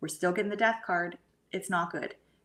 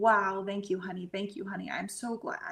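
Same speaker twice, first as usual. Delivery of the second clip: words said while crying. Retelling thanks spoken after taking a picture outside: retelling tearful thanks. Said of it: "and I'm just crying, going".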